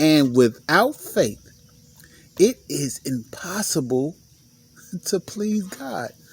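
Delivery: slow, drawn-out stress on impossible.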